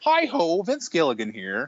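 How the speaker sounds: put-on frog puppet character voice. Joking that the Vince Gilligan impression sounds like Kermit the Frog: Kermit the Frog voice as Vince Gilligan. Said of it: "My Vince Gilligan's almost Kermit the Frog".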